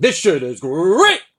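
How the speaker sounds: loud, wired, hyped-up cartoon mascot cheer. Retelling how the drug felt after two lines: coked-out Tony the Tiger voice. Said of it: "I felt like a coked-out Tony the Tiger going".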